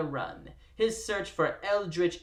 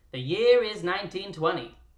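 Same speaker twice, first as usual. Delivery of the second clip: exaggerated, over-the-top twenties-style old-timey radio announcer voice; 4 dB louder than usual. Reading a text aloud in an exaggerated old-timey radio voice. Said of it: "read this to you in an annoying, old-timey radio voice".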